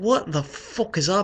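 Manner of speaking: put-on loosely done, vaguely Irish accent. Telling a story about walking down the street, the speaker tries a kind-of-Irish accent. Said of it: "kind of Irish".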